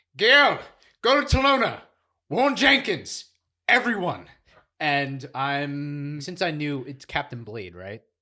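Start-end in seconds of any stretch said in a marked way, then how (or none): 0.2-4.3 shrill, very high, very loud all-out scream. Calling in character to a fleeing companion: screaming. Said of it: "I might just scream".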